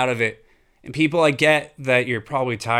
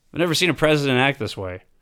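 plain

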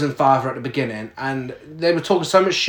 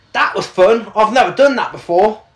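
heavily exaggerated, thick British accent; 6 semitones higher, 5 dB louder than usual. Quoting Gale after the party runs through a wall, exaggerated British Gale impression. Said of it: "the most British accent I could do".

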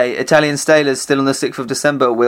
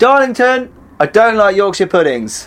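high, loud shouting; 8 semitones higher, 3 dB louder than usual. Repeating a confession after being dared to say it again: shouting it out. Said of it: "I'm gonna shout it out".

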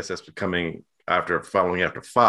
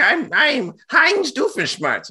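very high, slow, swooping, stretched-out sing-song cartoon voice; 5 dB louder than usual. Describing a cartoon character to others: Doofenshmirtz voice. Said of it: "And that's how he talks".

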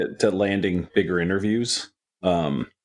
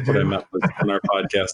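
normal talking voice

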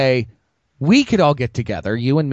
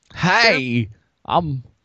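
put-on halting actor voice, higher pitch; 4 semitones higher than usual. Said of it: "You also lost your Christopher Walken impression".

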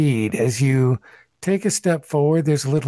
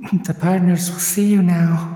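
echoey, pitched-up announcement voice; 5 semitones higher than usual. Narrating the receptionist at the desk looking up from her reading, in an echoing voice. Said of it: "in an echoing voice says".

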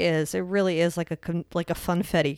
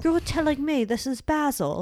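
lofty, royal put-on manner, pitched a touch higher; 8 semitones higher than usual. Doing a joke impression about basil, the Queen impression. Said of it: "That's my impression of the queen".

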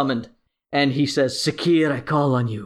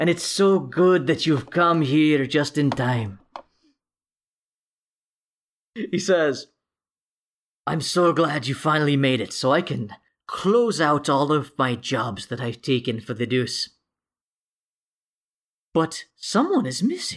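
smug, smirking villain voice. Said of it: "he's got this shit-eating smile on his face".

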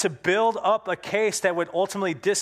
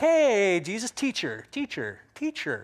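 mock gushing, flattering, over-friendly, slow and sing-song. Retelling how the questioner greets jesus, imitating an overly friendly greeting. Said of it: "He kinda comes up really friendly".

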